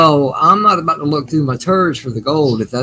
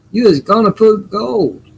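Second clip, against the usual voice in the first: slow, drawn-out Southern drawl, pitched up; 7 semitones higher than usual. Repeating another speaker's remark as a joke: southern accent. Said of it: "that sounded real Southern for a Canadian".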